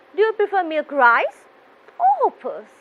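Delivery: pitch climbs on rice, drops on hoppers. Teaching a choice question: rise on rice, fall on hoppers. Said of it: "the first choice, you have to raise your voice, and the second choice, your voice will be going down".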